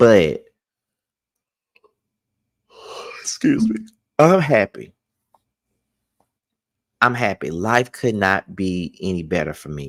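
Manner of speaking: fighting back tears, emotion barely held in check. Telling the audience they are happy while holding back tears. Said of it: "not to get all emotional and shed some fucking tears".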